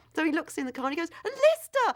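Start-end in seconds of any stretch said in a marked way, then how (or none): 1.3-2.0 high-pitched, loud, thrilled excitement. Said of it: "And he's so excited".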